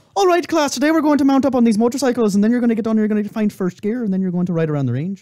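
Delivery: put-on rough, raw-edged Irish accent. Imitating a motorcycle instructor with a raw irish accent: imitating an irish accent. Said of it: "raw Irish accent".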